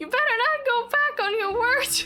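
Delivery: shrill, very high, loud character voice. Reading game dialogue aloud, doing the Paimon voice. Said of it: "I should do the Paimon voice".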